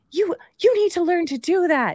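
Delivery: put-on berating tone, pitched very high. Retelling what the daughter said going to bed: imitating daughter berating. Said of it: "berating me as she goes to bed".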